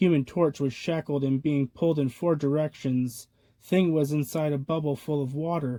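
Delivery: plain reading voice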